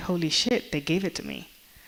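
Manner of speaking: ordinary delivery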